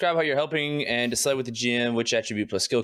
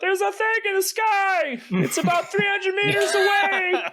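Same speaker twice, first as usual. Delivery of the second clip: shouting, higher; 3 dB louder than usual. Warning the party about a thing in the sky: yelling a warning in character. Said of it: "I am yelling out".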